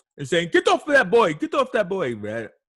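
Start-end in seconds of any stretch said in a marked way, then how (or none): 0.5-2.2 loud, pitched-up, put-on Caribbean West Indian accent. Retelling a bystander filming a cop who can't restrain a kid, in a West Indian accent. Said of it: "West Indian accent".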